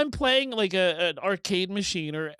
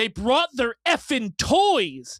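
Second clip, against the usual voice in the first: loud, full-throated screamed outburst; 4 semitones higher, 4 dB louder than usual. Retelling a favorite movie scene: imitating Paul Newman screaming. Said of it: "he screams at him".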